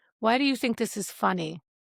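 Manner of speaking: ordinary talk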